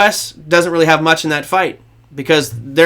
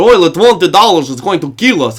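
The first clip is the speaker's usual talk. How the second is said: loud put-on Russian accent; 5 dB louder than usual. Discussing oil prices, voicing russia's side in a put-on russian accent. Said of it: "do the Russian accent".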